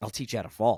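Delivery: ordinary talk, nothing marked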